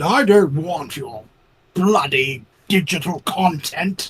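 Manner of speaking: drawn-out, haughty, snobby upper-crust rich-man drawl. Echoing another speaker's joke about digital games: snobby rich man voice. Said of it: "the rich guy from Gilligan's Island?".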